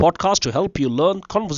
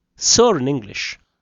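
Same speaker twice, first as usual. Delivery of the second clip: usual speaking voice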